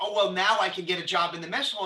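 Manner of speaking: ordinary talk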